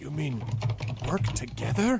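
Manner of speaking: hushed, almost scandalized, kept under the breath. A character looks around before answering an offer to join forces, in a lowered voice. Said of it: "He lowers his voice".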